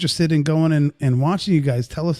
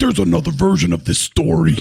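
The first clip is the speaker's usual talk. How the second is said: creaky, rasping, rough reading voice; 4 dB louder than usual. Reading a viewer comment aloud as if Bobby wrote it: reading a comment like Bobby. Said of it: "so I'm gonna read it like Bobby".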